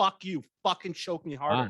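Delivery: shouting. Retelling what a past partner said during sex: imitating someone yelling. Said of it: "yelling at me".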